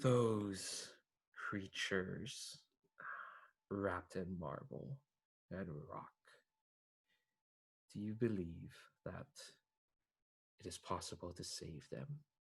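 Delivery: soft, weary, cold, somewhat sad voice. Voicing the mask of violence as it asks you a question, tired and cold voice. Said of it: "their voice sounds tired, tired and but cold".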